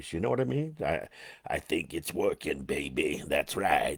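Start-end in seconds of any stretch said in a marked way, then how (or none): 1.5-4.0 very deep, very low late-night radio DJ voice. Talking to Debbie about his smoking voice, doing a Wolfman Jack voice. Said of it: "I'm getting that deep voice".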